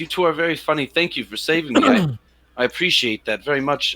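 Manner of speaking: high voice, giggling through the words. Voicing a rescued woman who thanks the heroes: giggling while speaking. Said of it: "she kinda giggles and she says".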